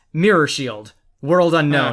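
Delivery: ordinary delivery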